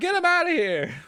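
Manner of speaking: put-on light Italian accent. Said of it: "giving them kind of light Italian accents".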